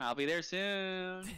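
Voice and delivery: slow, high, drawn-out war pig creature voice. Recalling the pig warrior from a film: imitating the war pig's voice. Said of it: "the voice of the fucking war pig".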